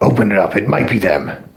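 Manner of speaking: authoritative, commanding voice of someone in charge. Narrating to players, a voice behind the door gives an order: authoritative voice. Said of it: "the more authoritative voice go".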